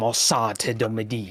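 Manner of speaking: mumbled to himself. Voicing a character muttering a curse at a creature: quiet mumbled phrase. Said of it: "mumbles this very quiet, um, loud enough if people are listening".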